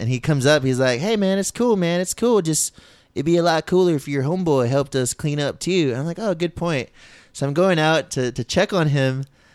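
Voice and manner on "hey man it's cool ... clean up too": put-on thick, strong rural country accent. Quoting the host of the house to a friend, in a thick country accent. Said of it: "he had this like real thick country accent".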